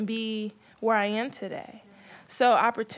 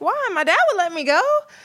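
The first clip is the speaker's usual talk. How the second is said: put-on high, loud, pleading young girl voice. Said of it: "And I'm like".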